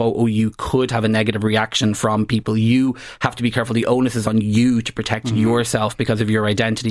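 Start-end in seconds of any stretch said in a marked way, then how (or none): none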